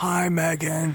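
put-on celebrity voice, sounding sick. Phoning in a skit call as Nicolas Cage: Nicolas Cage impression. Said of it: "You sound sick".

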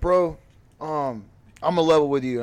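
mock tearful, choked-up voice. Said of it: "he's getting choked up".

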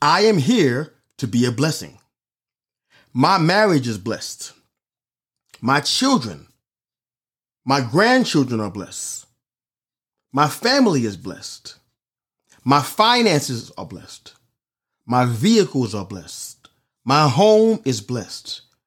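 very slow, deliberate, each word drawn out in turn. Reading a text aloud so listeners catch every detail, reading really slowly. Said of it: "I'm going to read it really slow".

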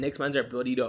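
plain

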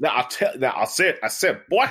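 put-on Southern preacher voice. Friends picture Foghorn Leghorn as a Southern Baptist and riff on it; Foghorn Leghorn preacher voice. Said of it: "Foghorn Leghorn as like a Southern Baptist".

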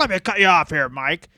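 sports commentator voice. Retelling a wrestling announcer cutting off his partner: imitating Don West. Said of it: "Don West being like".

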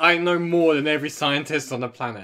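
ordinary delivery

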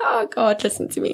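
tearful, starting to cry. Telling a story about someone they rarely talk about, the speaker is on the verge of tears. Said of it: "I'm going to start to cry".

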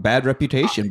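ordinary talk

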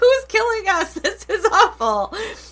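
mock very high, shrill, frightened shriek. Recounting screaming right after the husband screamed, retelling a frightened scream. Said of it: "I screamed".

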